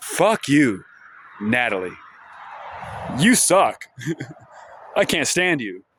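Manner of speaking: affectionate, good-natured, teasing tone. The speaker answers natalie's remark about burning trash in the woods: said with a smile. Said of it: "And I say it with a smile".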